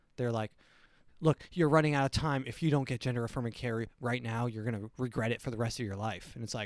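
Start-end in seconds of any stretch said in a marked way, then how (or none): 1.2-6.3 put-on desperate, urgent voice. Mocking people who push care on children: imitating a desperate voice. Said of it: "the desperateness on their voice".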